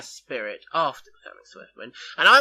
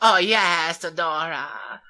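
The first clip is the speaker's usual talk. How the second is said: put-on character voice, strained and pushed; 3 semitones higher than usual. Discussing a show's voice actors, doing a character's line: Caster Speller voice. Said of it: "That's my impression of Caster Speller".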